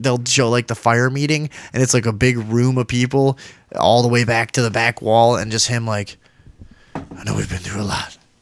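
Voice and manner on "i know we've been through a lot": so soft it barely carries, hushed. Speaker imitating a man addressing a packed room at a meeting, imitating an inaudibly quiet man. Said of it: "you would never be able to hear what he was fucking saying".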